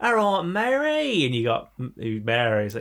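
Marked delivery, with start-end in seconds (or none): 0.0-1.2 put-on Cockney voice, much higher, slower. Explaining how Americans picture English people, in a Bert cockney chimney sweep voice. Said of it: "like you got Bert who's".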